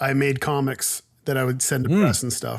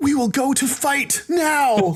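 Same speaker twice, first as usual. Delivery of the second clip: put-on anime character voice, very high and slow; 12 semitones higher than usual. Retelling how a voice actor sounded: imitating an anime character voice. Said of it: "he just sounded like an anime character".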